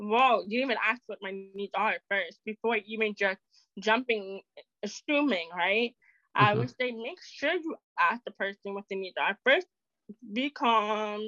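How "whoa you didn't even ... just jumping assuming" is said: ordinary talk, nothing marked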